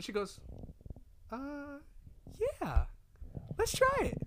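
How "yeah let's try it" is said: put-on girl voice, much higher. Retelling what she said when asked to go out, in a girly voice. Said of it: "I like that girl voice you did".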